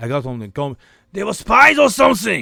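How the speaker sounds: put-on very loud, rough, high accented voice. Quoting a film where the actor goes undercover with his accent: Arnold Schwarzenegger impression. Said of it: "with his accent".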